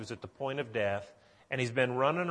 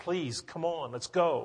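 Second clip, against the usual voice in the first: put-on panicked, urgent voice; 3 semitones higher than usual. Acting out a man urging Jesus to come to his dying daughter: imitating a panicked plea. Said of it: "I can just see the panic, and I can hear him in his voice".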